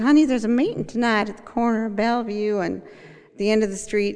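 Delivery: put-on real Southern accent, friendly and kindly. Retelling what a really nice woman on the aa phone said, in a southern accent. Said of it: "a real Southern accent".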